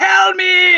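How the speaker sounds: very high, shrill, loud screaming. Retelling a movie role, imitating Gary Oldman screaming. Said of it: "screams the whole time".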